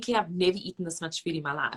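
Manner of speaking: ordinary talk, nothing marked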